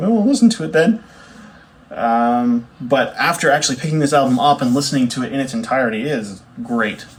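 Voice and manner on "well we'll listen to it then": put-on much higher, louder little kid voice. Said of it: "And I was just a little kid, I was like".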